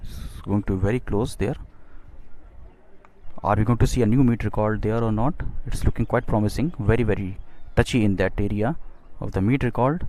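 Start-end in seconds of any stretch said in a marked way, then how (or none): none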